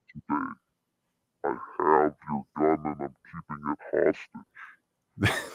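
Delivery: soft, hushed put-on monster voice. Hosts trying voice effects, one speaks as the monster: monster voice. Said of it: "Then we got the monster".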